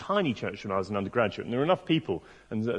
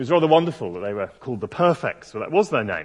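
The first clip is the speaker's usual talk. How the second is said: usual speaking voice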